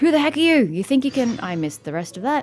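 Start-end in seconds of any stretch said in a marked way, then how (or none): 0.0-1.4 pitched-up, irate, angry man's voice. Reading out game dialogue: angry man's voice. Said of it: "Angry man's voice".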